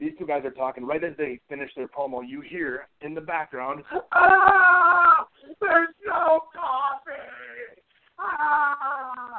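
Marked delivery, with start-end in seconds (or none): 4.1-9.4 play-acted very high, very slow wail, "ah" stretched. Retelling a wrestling promo bit: imitating Dean screaming. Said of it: "screaming his head off".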